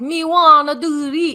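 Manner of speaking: very loud, slow, drawn-out fake Jamaican accent. Retelling how Tommy kept talking to the resort servers: imitating Tommy's fake Jamaican accent. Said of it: "trying to talk in a Jamaican accent".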